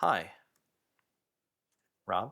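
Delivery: low voice like a talking computer. Giving an example line of character dialogue: HAL 9000 voice. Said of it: "in, like, a very, like, hal nine thousand way".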